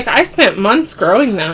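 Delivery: ordinary talk, nothing marked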